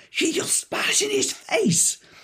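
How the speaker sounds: light, faint hint of a shriek. Speaker retells a woman behind them at a match; retelling a scream. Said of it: "at the top of her voice".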